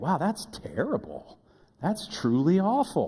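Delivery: slow, sing-song, hollow pretend sympathy. A parent demonstrating the tone used with their kids, mock-sympathetic tone. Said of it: "this tone of voice".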